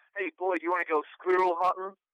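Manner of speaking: put-on, admittedly bad American accent, loud and high. Asked by the others to try it, giving a bad American accent. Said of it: "do you want me to do an American accent".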